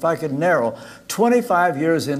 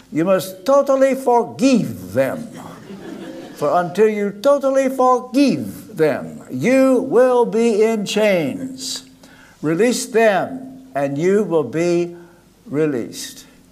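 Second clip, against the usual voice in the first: put-on English in a Romanian accent, high and slow; 5 semitones higher, 3 dB louder than usual. Retelling what Joseph told him, in Joseph's Romanian accent. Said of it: "in his Romanian accent".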